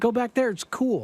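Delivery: cheerful, easygoing tone. Retelling a man telling overheated people to go back into a tunnel, imitating him sounding happy. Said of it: "He's very happy when he's saying it".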